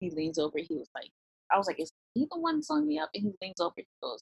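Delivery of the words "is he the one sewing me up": whisper, higher and quieter. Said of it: "whispered to my husband a little bit".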